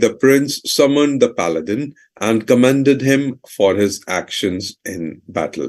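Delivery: plain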